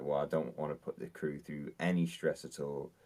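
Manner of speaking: usual speaking voice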